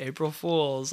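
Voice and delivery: mock-sarcastic delivery. Retelling how he answered her question on april 1st; retelling a sarcastic remark. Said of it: "I like say it sarcastically".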